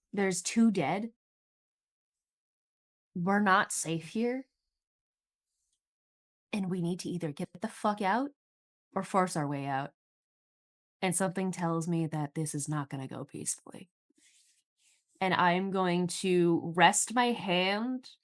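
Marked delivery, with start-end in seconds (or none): 0.1-13.9 hushed whisper. In character, speaking to the others in the group, whispering. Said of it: "I'm whispering to the others".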